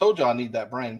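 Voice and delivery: ordinary talk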